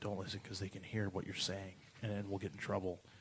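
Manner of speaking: very quiet, secretive, hushed murmur. Retelling what the hotel desk clerk said while pointing at cameras: imitating someone speaking real quiet. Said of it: "his voice got real quiet".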